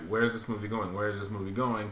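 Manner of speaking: ordinary talk, nothing marked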